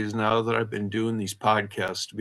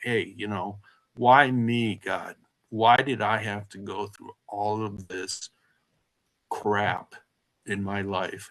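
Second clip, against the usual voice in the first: weeping, tearful, despairing, pleading cry. Retelling crying out to God in the state institution: retelling a tearful plea. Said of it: "crying out to God saying".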